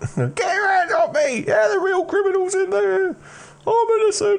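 squeaky, very high-pitched, objecting voice. Narrator voices someone carried off by two guards, in a squeaky objecting voice. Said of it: "you do hear a sort of squeaky voice objecting".

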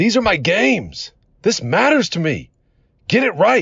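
put-on fierce, intense yell, very high and shrill. Retelling how a teammate yelled at the coach: imitating a teammate yelling at the coach. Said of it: "Adam yells out".

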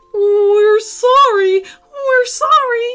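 very high, very slow, shrill, drawn-out squeal. Teenagers answer after being roared at over their mess, squealing. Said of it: "squealed the teenagers".

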